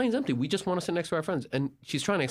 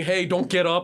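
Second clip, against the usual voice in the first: put-on loud yelled call; 2 semitones higher, 5 dB louder than usual. Telling a plane story, quoting men calling out, imitating someone yelling. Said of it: "They're yelling".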